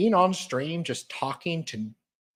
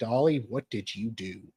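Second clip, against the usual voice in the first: put-on stern, disapproving, scolding voice; 5 semitones lower than usual. Imagining how she will react on seeing this: imitating a stern voice. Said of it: "And be all stern".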